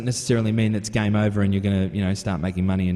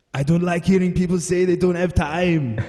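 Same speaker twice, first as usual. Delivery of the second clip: clumsy put-on Austrian accent, pitched way up; 9 semitones higher, 4 dB louder than usual. Quoting something Arnold Schwarzenegger once said, Schwarzenegger accent impression. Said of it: "I'm going to do a really bad impersonation here".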